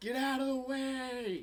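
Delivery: very high goat-voice yell, dragged way out. Narrator voicing Luke Pygmus yelling toward Broseph, in his goat voice. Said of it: "yelling towards you in his goat voice".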